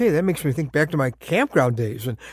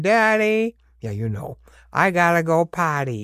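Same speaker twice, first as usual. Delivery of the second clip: put-on small, childlike voice. A dad retells his child calling out in the dark: little child's voice. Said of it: "you would hear a little voice saying".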